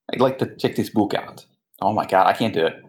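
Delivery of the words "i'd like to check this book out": put-on heavy, thick, strong Russian accent. Retrying a library line after being told it sounded Russian: strong Russian accent. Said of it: "That was even more Russian".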